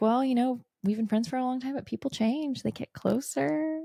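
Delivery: acted-out seductive vixen voice. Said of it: "Willow's talking like she's a vixen".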